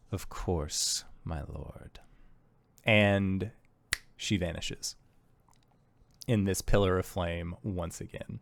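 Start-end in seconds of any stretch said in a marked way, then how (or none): 0.1-2.0 hushed whisper through gritted, clenched teeth. A storyteller voices a character answering her lord, through clenched teeth. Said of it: "And through clenched teeth".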